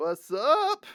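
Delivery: voice breaks partway, cracking high. Greeting listeners at the start of the recording: voice cracking. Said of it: "As my voice cracks".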